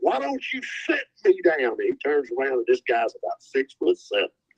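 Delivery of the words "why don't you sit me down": piercing, very high scream. Retelling how a man screamed back at someone who told him to sit down, retelling a scream. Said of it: "Curb screams out".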